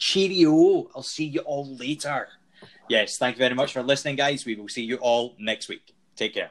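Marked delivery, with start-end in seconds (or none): 0.0-2.3 slow, drawn-out, high Scottish accent. Saying goodbye to listeners after others said bye in their languages: Scottish accent. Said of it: "I better do this in Scot-, Scottish".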